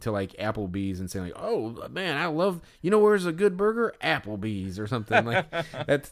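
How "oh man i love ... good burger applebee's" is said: very high-pitched country bumpkin twang. Talking about a burger, picturing a country bumpkin at applebee's; country bumpkin voice. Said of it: "I regret doing that voice".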